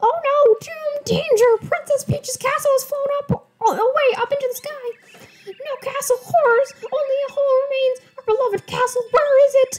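very high, squeaky mouse voice. Reading a toad's dialogue aloud while playing a game: Mickey Mouse-like Toad voice. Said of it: "My toad voices kind of sound like Mickey Mouse".

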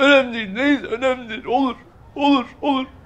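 crying, tearful and weeping. A student answers his teacher's questions about family expenses, crying. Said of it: "Sen ağlama".

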